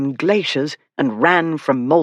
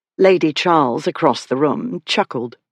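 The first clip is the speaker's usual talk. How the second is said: plain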